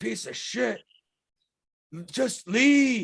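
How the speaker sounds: very loud, very slow, high creature shout. Game master voicing a creature answering the players, creature shouting. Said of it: "As he shouts out".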